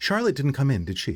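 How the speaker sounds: clipped halfling speech. Voicing a halfling asking about a missing dancer: clipped halfling voice. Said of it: "you're going to hear him kind of clipping in, in Halfling".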